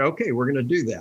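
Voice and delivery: ordinary talk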